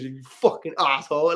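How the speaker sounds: put-on real, properly done, full Caribbean accent. Retelling hitting Iredale with a thrown hat, imitating Iredale's Caribbean accent. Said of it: "like in this proper like um Caribbean accent".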